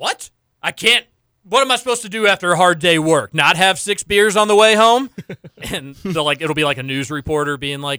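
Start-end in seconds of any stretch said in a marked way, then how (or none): 0.0-5.1 put-on, loud, high, put-upon, indignant complaining tone. Describing hilarious videos about new DUI laws, quoting someone reacting: mock-indignant complaining. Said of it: "You'll get somebody that'll be like".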